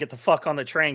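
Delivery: ordinary talk, nothing marked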